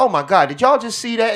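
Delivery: very high, shrill, very loud blurt. Imitating a daughter talking through a movie: imitating daughter talking loudly. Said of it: "not even whispering".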